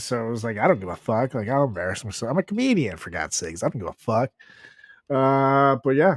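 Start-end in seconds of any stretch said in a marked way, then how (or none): none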